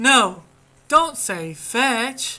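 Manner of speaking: very slow, drawn-out, deliberate heroic delivery.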